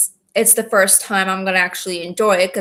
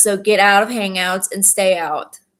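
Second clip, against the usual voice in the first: ordinary talk, nothing marked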